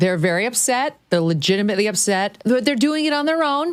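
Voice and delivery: high, sneering, mocking, sarcastic put-on voice.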